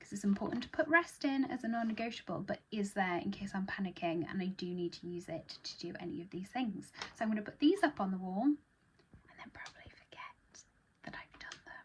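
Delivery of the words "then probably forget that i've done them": hushed under-the-breath whispered aside. Speaking to the audience and dropping into a whispered aside. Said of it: "I'm whispering that".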